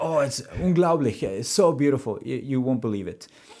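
put-on thick Austrian accent. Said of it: "really thick accent".

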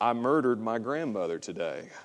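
hushed, low mumble under the breath. Acting out a man testing whether guests in a reception line listen, in a real low mumble. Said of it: "in a real low voice".

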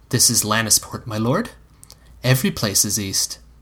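plain reading voice

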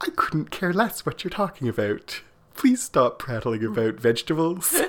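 mock very cheerful, bright, sing-song delivery. Retelling how Sister Bernadette answered Jenny's garden talk, imitating Sister Bernadette's cheerful voice. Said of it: "with a big smile and a very cheerful voice".

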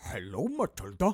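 loud, playful, silly pig puppet voice. Retelling a hitman comforting a sobbing girl with a pig oven mitt, piggy voice. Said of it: "does the piggy voice".

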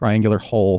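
plain reading voice

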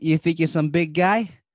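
put-on Boston accent. Riffing on Boogie Nights with others, in a put-on Boston accent. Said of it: "If I'm gonna do a Boston accent".

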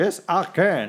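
commanding authoritative voice. Retelling a comedian's bit where Obama finally finds his voice: authoritative Barack Obama voice. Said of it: "really authoritative, strong Barack Obama voice".

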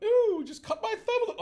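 "ooh" said very high-pitched and loud. Describing a teacher who resembles a TV chef: Julia Child "ooh" voice. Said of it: "she doesn't have the ooh voice".

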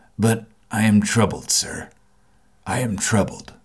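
subdued, low, quiet voice. The man rejoins to the narrator, in a low voice. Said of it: "sallow man with a dark beard and rather heavy eyebrows. ... in the low voice in which he had first spoken".

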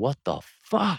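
mock, high-pitched, pissed-off yell. Retelling a sudden blast inside a vehicle: imitating own angry yell. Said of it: "I just remember yelling".

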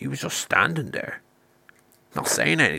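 low, sidelong muttered aside under the breath. Retelling a story, quoting a woman beside the till: imitating a muttered aside. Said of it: "mutters under her breath".

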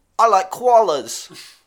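put-on Australian man voice. Joking about a phone assistant with an Australian man's voice: Australian Siri voice. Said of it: "it's an Australian man".

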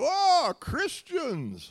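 abrupt, very high, loud, swooping exclamation. Retelling how a man seated across from them blurted out after their prayer, retelling a sudden blurt. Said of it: "blurted out".

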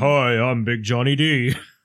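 deep voice, dragged out very slowly, low drawl. Mocking how another speaker's voice sounds today: imitating John's low voice. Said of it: "it's like someone's like".

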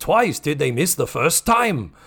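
clumsy, bad put-on Japanese accent. Comedian retells a man's reply to a woman: terrible Japanese accent. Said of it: "I'm doing a terrible Japanese accent".

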